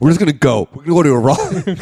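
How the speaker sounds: mock wired, hyped-up voice. Acting out two people high on coke planning a trip: imitating someone high on coke. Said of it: "just did a shit ton of coke".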